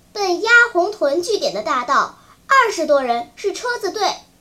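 ordinary delivery, nothing marked

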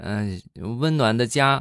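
put-on slow, high-pitched, childish schoolchild voice.

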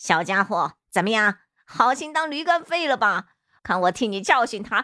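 roaring, loud laughter. Speaking to another character while laughing loudly. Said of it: "落手空哈哈大笑呵呵".

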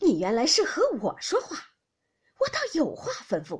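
loud, sharp, severe, cutting, stern reprimand. A mother stops walking and answers her son; stern, sharp voice. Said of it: "厉声说道".

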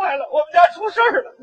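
tearful, sobbing while speaking. Asked why they are crying, speaker answers, crying while speaking. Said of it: "怎么哭了？".

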